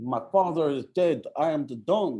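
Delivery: put-on high Italian accent. Retelling a mob movie line, imitating Master P's Italian accent. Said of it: "Why is Master P talking in an Italian?".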